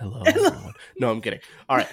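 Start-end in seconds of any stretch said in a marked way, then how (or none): 0.0-0.7 fake soft ASMR voice, very high. Joking after saying the voice sounds seductive: mock ASMR voice. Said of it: "Little A S M R".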